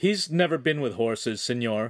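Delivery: ordinary delivery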